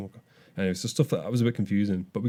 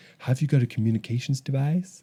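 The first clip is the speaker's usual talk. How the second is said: really bad, badly botched fake American accent; 4 semitones higher than usual. Retelling what a girl at the desks asked them, in a really bad American accent. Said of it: "they all use this really bad American accent".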